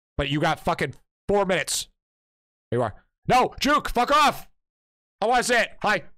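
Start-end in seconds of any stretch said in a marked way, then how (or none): 3.2-5.6 very high-pitched, shrill shouting. Streamer talking to chat while playing, yelling. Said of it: "Sorry for all my yelling today".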